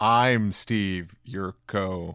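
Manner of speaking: deliberately bad, poorly acted delivery. Introducing himself at the start of an episode; deliberately bad read. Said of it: "A bad read, but on purpose".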